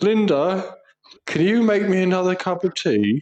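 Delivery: lazy demanding call. Describing their dad parked in his armchair for hours, the speaker quotes him: imitating their dad. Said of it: "it's literally like".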